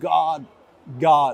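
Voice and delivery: ordinary talk, nothing marked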